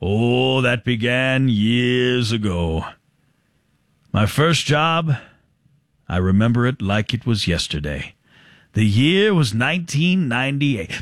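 talking as slowly as possible, exaggeratedly drawn out. Showing how you would answer an interviewer about your work history, talking as slowly as possible. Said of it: "talk as slow as you possibly can".

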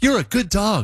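high-pitched, sing-song, praising voice. Describing a study on talking to dogs, demonstrating a high-pitched voice to a dog. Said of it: "I can't get high enough".

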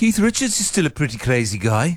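put-on Liverpool accent. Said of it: "[name], what did I say?".

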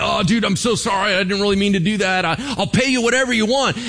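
high-pitched, halting, stumbling speech with a stammer. Storyteller acting out King Hezekiah facing the invading army; acting out King Hezekiah stammering. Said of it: "King Hezekiah starts stammering".

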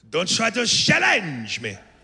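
slow, swooping delivery, hard to make out. Quoting a movie villain before a fight: Jean-Claude Van Damme impression. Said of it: "Van Damme says to Stallone".

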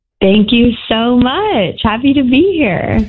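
cheerful, happy, thankful tone. A newlywed caller on a radio show thanks the hosts, happy. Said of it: "You sound happy".

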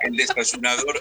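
high-pitched voice, laughing while speaking.

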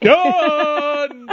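obnoxious-sounding "done". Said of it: "But I'm not gonna say it nicely, like, under my breath".

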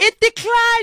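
high, loud lady's voice. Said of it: "The lady who's serving me is like".

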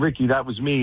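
plain

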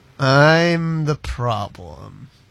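put-on beaten-down, drunk-sounding, defeated, drawn-out I'm. Asked to say the words again the way he said them, mock-defeated. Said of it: "Very defeated".

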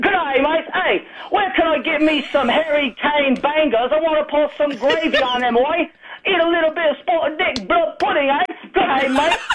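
boisterous, rowdy whooping, pitched high. Acting out someone in a team jersey walking into a bar: mock screaming. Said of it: "walking into a bar screaming".

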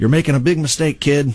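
put-on heavy Chicago accent. Speaker quoting a man who had never been to Peoria, in a thick Chicago accent. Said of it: "a thick Chicago accent".

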